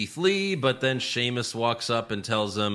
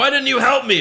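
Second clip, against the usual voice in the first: very high-pitched, shrill yell; 13 semitones higher, 8 dB louder than usual. Recapping a wrestling match, quoting one wrestler shouting at another: retelling a yell. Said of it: "Elias yells at Riker".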